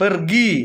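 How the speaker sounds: pergi stressed on second syllable gi. Indonesian explanation of word stress using pergi: stress on gi in pergi. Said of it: "ada tekanan gi-nya itu seperti itu".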